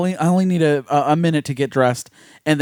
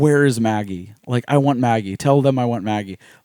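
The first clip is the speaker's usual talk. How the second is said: put-on heartbroken tone, lower; 4 semitones lower than usual. Retelling a film character asking for a friend: imitating a heartbroken plea. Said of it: "And how heartbroken she is".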